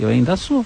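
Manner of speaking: very hushed, barely audible, said under the breath. Acting out what a person will answer when asked, very quiet, under the breath. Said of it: "A pessoa vai falar bem baixinho assim".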